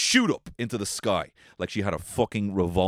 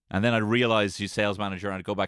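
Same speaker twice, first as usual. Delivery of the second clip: ordinary delivery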